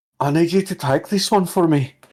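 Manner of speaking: hushed whisper. Player's character leans back and speaks to the shadow behind her, whispering. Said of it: "look behind her and whisper".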